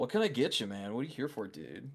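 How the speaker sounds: cheeky, sassy character voice. Voicing a baker asking a player what they want: sassy baker character voice. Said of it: "He's like".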